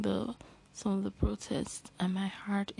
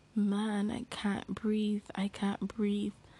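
ordinary talk, nothing marked

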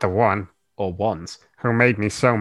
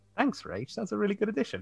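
sarcastic-sounding, very high-pitched and hushed; 10 semitones higher, 12 dB quieter than usual. Thanking a co-host for an addition, sounding sarcastic. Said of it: "That sounded really sarcastic".

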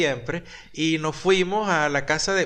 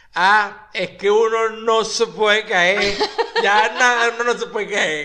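put-on drawn-out, sloshed, tipsy drunken voice, pitched up; 5 semitones higher, 6 dB louder than usual. Retelling their own reply after a bad fall, imitating a drunk voice. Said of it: "ya con voz de rascado".

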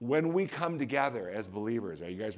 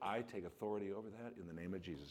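soft, lower, quieter under-breath mutter; 3 semitones lower, 13 dB quieter than usual. Retelling words said on getting into the car: retelling a soft under-breath murmur. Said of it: "just real softly under my breath".

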